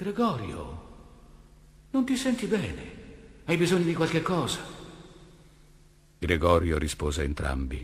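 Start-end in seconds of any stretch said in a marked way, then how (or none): 0.0-4.6 feeble, faint, pitched-up voice. The sister asks gregorio through the other side door: asked faintly. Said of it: "la sorella chiese flebile".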